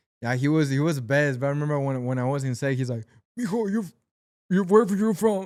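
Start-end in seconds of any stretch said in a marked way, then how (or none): 3.4-5.5 hoarse, raspy voice, pitched slightly up. Retelling meeting the actor on set: raspy Danny Trejo voice. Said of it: "he talks with that raspy voice".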